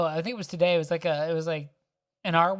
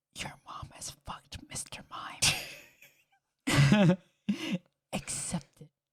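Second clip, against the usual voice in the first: slow, drawn-out, breathy whisper, close up; 4 dB quieter than usual. Acting out sneaking up behind Ash during a talk: whispering in his ear. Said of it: "whisper in his ear".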